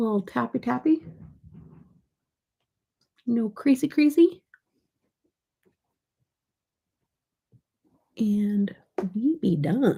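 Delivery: goofy crazy-person voice. Tapping on makeup and narrating the steps, talking like a crazy person. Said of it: "I don't know why I'm talking like a crazy person".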